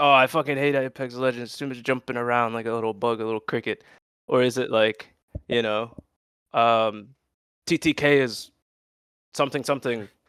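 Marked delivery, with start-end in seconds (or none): none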